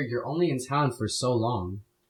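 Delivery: soft, close, leaning-in half-whisper. Retelling what he leaned over and half-whispered: imitating a half-whisper. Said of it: "he leans over and whispers in my ear".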